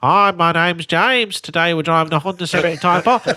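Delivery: put-on blocked-nose, stuffy, congested voice. A presenter imitates how he sounded in his old videos, imitating his stuffy cold voice. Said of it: "I have a cold in all of them".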